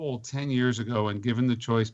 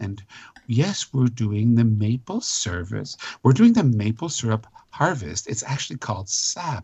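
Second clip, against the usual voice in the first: put-on earnest TV presenter voice, louder; 5 dB louder than usual. Imitating how public television presenters talk: mock earnest presenter voice. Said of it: "they talk like this".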